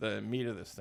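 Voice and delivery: ordinary talk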